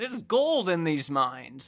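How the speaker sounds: put-on old-timey, gold-rush prospector character voice. Speaker imagines what he would sound like with a voice; old-timey prospector voice. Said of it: "Like a prospector or something".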